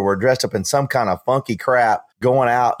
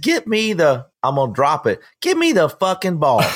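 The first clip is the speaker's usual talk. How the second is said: put-on yelling, shouting; 4 semitones higher than usual. Retelling a man yelling at offensive coordinators while behind, retelling a yell. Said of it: "And he's yelling at offensive coordinators".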